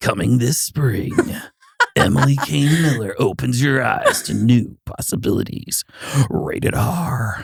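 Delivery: cinema preview narration voice. Redoing a guest introduction on a show, movie trailer voice. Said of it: "That sounds like a movie trailer".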